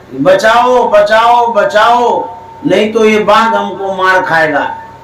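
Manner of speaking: normal talking voice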